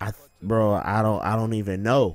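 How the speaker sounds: acted stunned, sorrowful disbelief in low, soft, pained voice. Retelling the reply of a man he phoned after bad news: imitating a sad, pained voice. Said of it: "I could hear the sadness, like the disbelief, the pain in his voice".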